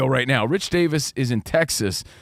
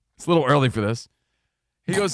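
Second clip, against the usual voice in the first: ordinary talk, nothing marked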